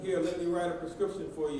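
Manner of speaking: normal talking voice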